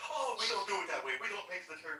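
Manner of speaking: snooty Italian chef voice. Retelling a cooking clip, imitating a pretentious Italian chef. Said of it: "that really pretentious Italian chef guy comes on there and says".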